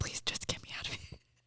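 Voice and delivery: hushed, very quiet whisper. Acting out the other speaker pleading to a fake crew: imitating someone whispering. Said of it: "whispering to, like, whoever the, this fake crew is".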